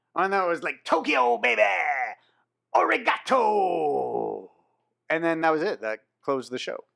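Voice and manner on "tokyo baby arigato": rough, swooping promo voice, "arigato" drawn out. Retelling a wrestler's post-match interview line: Mark Briscoe impression. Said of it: "in pure Mark Briscoe fashion goes".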